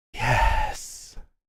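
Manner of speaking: very breathy, breath-heavy zombie voice. Describing a figure held together by ghostly apparitions, the speaker answers in a very breathy voice. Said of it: "He says with a very breathy voice".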